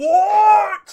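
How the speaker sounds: shouting from afar. Voicing a voice calling across the square: distant shout. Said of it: "another voice shouting".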